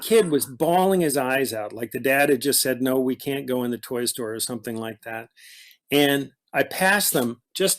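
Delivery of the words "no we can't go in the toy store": ordinary talk, nothing marked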